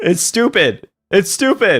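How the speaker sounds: talking through laughter. Reacting to a strange video with others, laughing while talking. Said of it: "I'm laughing, okay?".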